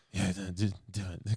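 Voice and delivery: put-on whisper. Retelling a stuntman's challenge, imitating Steven Seagal whispering. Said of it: "'cause he whispers".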